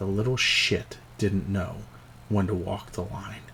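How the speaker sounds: very quiet mumbled muttering under the breath. Voicing a drunk character who mutters a line: muttered under his breath. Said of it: "you catch it under his breath".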